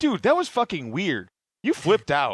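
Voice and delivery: confused, baffled voice with swooping pitch. Imagining friends hearing someone speed away, imitating a confused friend.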